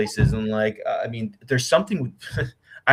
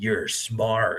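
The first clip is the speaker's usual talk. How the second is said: spooky, unsettling, creepy, eerie voice; 3 dB quieter than usual. Recounting what an app seemed to say to them, imitating a creepy voice. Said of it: "Like it was like a creepy voice".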